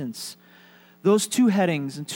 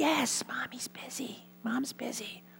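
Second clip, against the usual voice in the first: put-on very hushed, high, slow small child whisper; 7 semitones higher, 11 dB quieter than usual. Telling a joke, voicing a four-year-old who answers the phone: whispering little voice. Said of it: "And still whispering, the little voice said".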